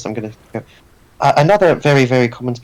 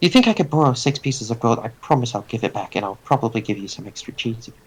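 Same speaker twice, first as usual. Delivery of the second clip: whispered under breath, quieter; 6 dB quieter than usual. Speaking in-game to another player, whispered. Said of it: "I'm gonna whisper".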